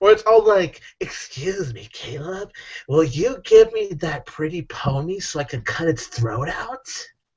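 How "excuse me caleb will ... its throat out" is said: creepy put-on clown voice. Acting out a clown asking caleb for his pony: creepy clown voice. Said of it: "I really am creepy when it comes to this clown".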